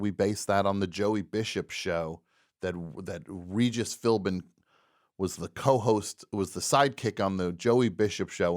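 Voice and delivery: ordinary talk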